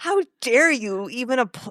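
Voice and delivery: sounding very offended. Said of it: "She was, like, so offended".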